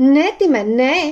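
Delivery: startled, frightened shout of alarm. A girl sees her pet reach to scratch its bandaged ear and cries out in fright. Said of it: "Vykřikla Georgie vyděšeně".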